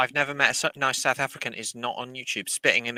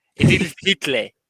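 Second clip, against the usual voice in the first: put-on, mock South African accent; 3 semitones higher, 8 dB louder than usual. A speaker demonstrates how a name sounds in a South African accent. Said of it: "That's how you say Adolf Hitler in a South African accent".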